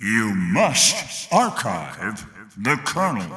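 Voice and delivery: deep, authoritative, menacing announcer voice. Asked to say the line in an announcer voice, menacing announcer voice. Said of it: "just say that with your announcer voice".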